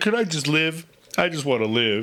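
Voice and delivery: over-the-top fake sobbing, whining voice. Retelling a press conference answer, mock crying, imitating LeBron James. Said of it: "why you gotta cry about it?".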